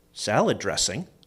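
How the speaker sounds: play-acted puzzled, low, quizzical tone. Describing what they sometimes say at the table, in a quizzical voice. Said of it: "in a quizzical voice".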